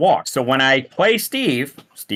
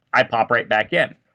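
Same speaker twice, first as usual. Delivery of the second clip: usual speaking voice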